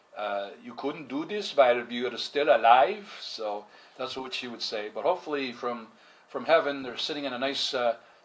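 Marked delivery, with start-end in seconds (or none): 0.6-3.0 put-on guilt-tripping Hungarian accent. Quoting what mom would say to guilt him: imitating mom's Hungarian accent.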